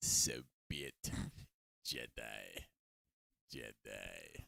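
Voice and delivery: very low, slow, dragged, rasping voice. Signing off to the listeners with a line in a deeper Palpatine voice. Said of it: "deeper voice of Palpatine".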